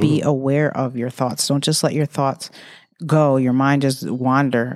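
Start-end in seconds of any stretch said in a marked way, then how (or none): none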